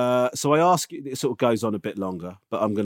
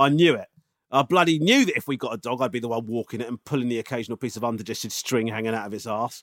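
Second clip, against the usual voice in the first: normal talking voice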